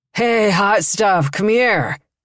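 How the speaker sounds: put-on drunken, slurred, sloppy words running together. A man staggers out of a bar and calls after the narrator, slurred. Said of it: "he slurred".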